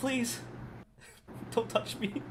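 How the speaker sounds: trembling, quivering, fearful voice. The narrator voices a frightened woman the player lands near: Urara's quivering frightened voice. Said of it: "you hear her voice quivering".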